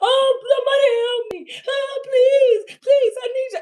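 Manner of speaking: very high, acted sobbing, pleading cry, long drawn-out oh. Mocking how others expected the listener to cry in a corner, doing a mock crying plea. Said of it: "thought you was gonna get in the corner and cry".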